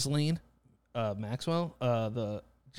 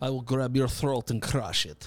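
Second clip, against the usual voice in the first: terrible put-on Russian accent. Imitating a movie character's terrible fake Russian accent. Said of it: "very American doing Russian accents".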